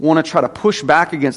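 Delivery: plain reading voice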